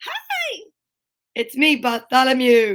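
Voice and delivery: put-on sing-song, swooping English accent. Voicing the social distancing buddy greeting the viewers: English accent as Bartholomew. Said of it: "you have an English accent today?".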